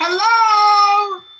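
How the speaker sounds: loud, high, long-held, drawn-out scream. Calling out to others who are talking over the call: screaming. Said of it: "Why is he screaming?".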